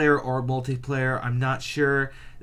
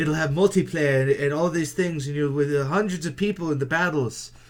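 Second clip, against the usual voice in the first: put-on British accent. Imitating a game developer pitching his game: Molyneux impression with British accent. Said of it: "Molyneux walks in a room and goes".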